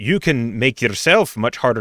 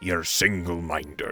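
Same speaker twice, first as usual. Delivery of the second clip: put-on dragon voice, lower and quieter; 5 semitones lower, 9 dB quieter than usual. Retelling what a dragon said: impression of Tabernac the dragon. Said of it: "that's a good impression".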